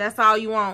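loud, rude, sassy tone with attitude. Imitating a McDonald's order taker: imitating a worker with an attitude. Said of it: "whoever take your order always got an attitude".

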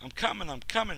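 crying out impatiently. The prostitute answers the John knocking at her door, crying impatiently. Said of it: "she cried impatiently".

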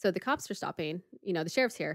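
plain

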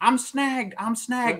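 acted, very high, long, drawn-out hollering yell. Retelling a fisherman hooked on a deep-water boat: imitating someone yelling. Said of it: "he's yelling at the guy".

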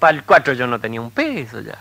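normal talking voice

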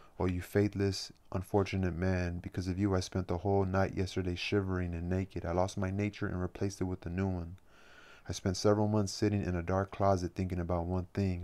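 ordinary delivery, nothing marked

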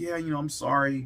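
plain

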